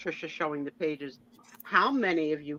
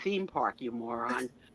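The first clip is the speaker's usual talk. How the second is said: mock patronizing, smug, condescending know-it-all tone; 5 semitones lower, 4 dB quieter than usual. Retelling how the other speaker said the answer: imitating a smug know-it-all. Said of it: "when you say, like, theme park, it's like".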